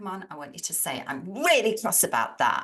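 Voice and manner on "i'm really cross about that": loud, cross, angry voice with swooping pitch. Leading an audience exercise, modeling the line in an angry tone. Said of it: "use the voice tone of anger".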